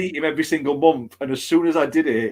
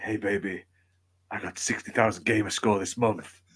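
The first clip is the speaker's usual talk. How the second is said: put-on whisper, lower and quieter; 6 semitones lower, 7 dB quieter than usual. Mocking achievement chasers like the club meme guy: mock whispering in someone's ear. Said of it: "he whispers in their ear".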